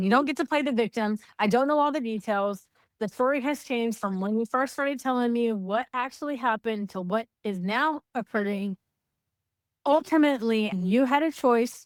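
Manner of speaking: normal talking voice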